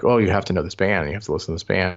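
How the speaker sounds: ordinary talk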